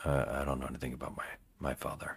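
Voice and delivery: hushed, low, emotionless deadpan monotone. Mimicking an actor's monotone delivery from a movie, low, flat and emotionless. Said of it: "His acting is very, very monotone. He's very low talking. He doesn't do a lot of emotion. He basically does this".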